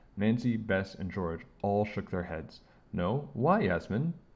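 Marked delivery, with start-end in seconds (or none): 3.0-4.2 inquisitive, curious, questioning tone. A narrator reads one friend's question to another, curious. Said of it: "Meadow said curiously".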